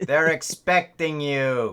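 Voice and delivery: weird Brooklyn receptionist voice. Voicing a tentacle monster receptionist greeting players: weird put-on brooklyn accent. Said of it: "my weird ass".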